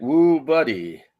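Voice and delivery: slow, strained fake Texan drawl over Indian accent. Speaker retelling what a man said to a girl, Indian guy faking Texan accent. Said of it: "He sounded like a guy from India trying really hard to talk like he was from Texas".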